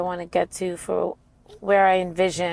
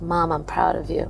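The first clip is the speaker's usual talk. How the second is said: put-on whisper. Retelling what a son said at an event: imitating a whisper. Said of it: "he whispered in my ear".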